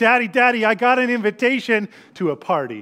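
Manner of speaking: put-on eager, bubbling-over, excited sing-song four-year-old voice. A father acts out his four-year-old home from school: imitating excited four-year-old. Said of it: "she gets all excited and she".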